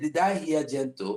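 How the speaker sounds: plain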